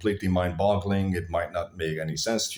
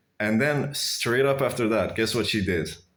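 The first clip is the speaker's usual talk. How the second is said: ordinary delivery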